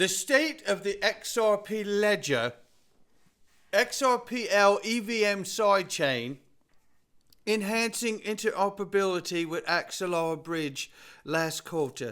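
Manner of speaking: slow, half-hearted, sloppy put-on English accent. Announcing the Ripple market report to viewers, in a half-assed English accent. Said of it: "my half-assed version that I just did".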